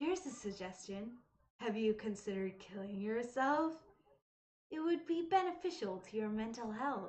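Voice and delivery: creepy, unhinged, menacing delivery. Reading Yuri's dialogue aloud: creepy Yuri voice. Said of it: "my good creepy Yuri voice".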